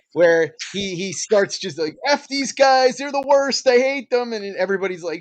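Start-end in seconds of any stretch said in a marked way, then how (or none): 2.1-4.4 high, fed-up griping voice. Comparing another speaker to a movie character, imitating Randy Quaid's Major League Two character. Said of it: "Randy Quaid's character in, uh, Maj-, in Major League Two".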